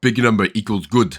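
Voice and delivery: half-done, put-on slight Russian accent. Speaker explaining their simple approach to the game, in an almost Russian accent. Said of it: "I said that in an almost Russian accent".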